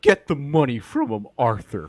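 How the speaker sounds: loud, high, swooping character voice. Joking around with others and addressing Arthur, in an attempted John Marston impression. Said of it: "I was trying to do a Marston".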